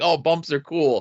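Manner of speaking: normal talking voice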